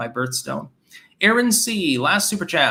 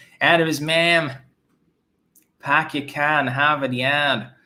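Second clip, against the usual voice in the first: put-on, fake Boston accent. Answering a comment that a phrase sounded Boston: put-on Boston accent. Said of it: "it sounded like a Boston accent".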